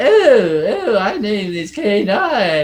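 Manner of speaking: high, very slow, drawn-out, drugged-sounding voice. Retelling how the changed voice in Doctor Who sounded: imitating K9 sounding drugged. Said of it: "K nine sounded".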